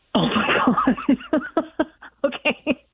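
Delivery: talking through laughter. Reacting to hearing about an eviction notice: laughing while talking. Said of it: "I'm happy you're laughing about this".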